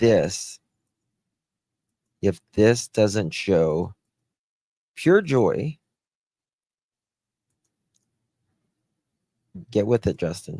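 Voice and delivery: choked up, on the verge of tears. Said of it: "I'm gonna start crying".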